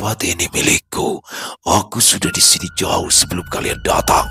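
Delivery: heavy, deep, reverberating, echoing voice. Narrator reads the creature's words to the group: deep, echoing voice. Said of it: "ia berbicara dengan suara berat dan bergema".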